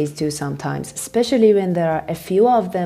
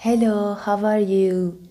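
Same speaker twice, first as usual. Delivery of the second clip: put-on Persian accent; 3 semitones higher than usual. After explaining own English accent, demonstrating the stereotypical Persian accent. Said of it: "be ready for the stereotypical Persian accent".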